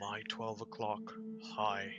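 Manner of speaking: soft, hushed put-on whisper. Whispering to two companions while backing into them in character: whispering in character. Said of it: "I'm just gonna whisper".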